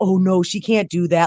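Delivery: mock scared, panicked police officer voice. Retelling how a local cop reacted to her invitation: imitating a scared cop. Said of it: "he was freaking out".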